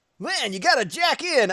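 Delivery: anime hero voice, pitched way up. Imitating a cute anime character with a little anime face: Mega Man.EXE voice. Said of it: "He's like".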